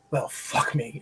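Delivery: put-on deep growling British accent, hushed, near whisper. Retelling a scene where Roy turns and runs back, in Roy's deep growling British accent. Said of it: "deep British growling accent".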